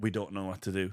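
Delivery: ordinary delivery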